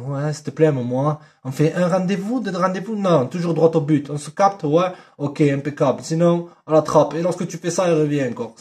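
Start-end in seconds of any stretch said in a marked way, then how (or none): 0.1-1.2 sweet, syrupy, honeyed, pleading voice. Demonstrating how he would come on as a seducer, honeyed voice. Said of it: "avec une voix mielleuse".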